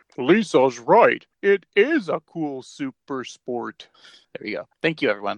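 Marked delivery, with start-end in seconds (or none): 0.2-3.9 very slow, lumbering, drawn-out cartoon dad voice. Podcast host quoting Homer's reply to Lisa, in a Homer Simpson voice. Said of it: "Do you want me to do it in my Homer voice?".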